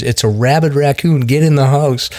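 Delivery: acted, high, frantic, panicked scream. Retelling a mother holding a raccoon screaming to someone off camera; retelling a scream. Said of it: "she just screams".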